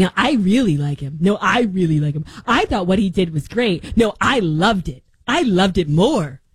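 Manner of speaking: scornful, derisive send-up of a pick-me voice. Mocking people who gush about the killing: mocking pick-me imitation. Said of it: "Talk about pick me's. They're like".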